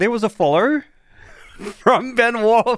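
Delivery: full Australian accent, very high-pitched. Streamer thanking a new follower on stream: full Aussie accent. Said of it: "I went full, full that Aussie, that Aussie accent".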